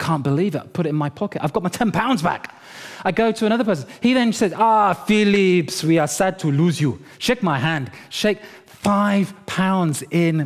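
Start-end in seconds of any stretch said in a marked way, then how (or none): 4.5-10.5 put-on Nigerian English accent throughout. Retelling what another man said to him, in a Nigerian accent. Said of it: "Nigerian accent".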